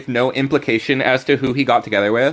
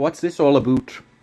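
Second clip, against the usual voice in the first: put-on Canadian accent. Imitating a character's voice line: Leon with Canadian accent. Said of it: "He has a Canadian accent".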